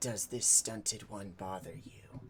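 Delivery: low, dropped voice spoken down low. Retelling a scene where he kneels down to Aaron, in a low voice. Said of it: "in his low voice".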